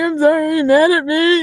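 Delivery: high, meek, sheepish, sorry-sounding voice. Retelling meeting the husband after jail: imitating a sheepish apology. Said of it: "tail between your legs".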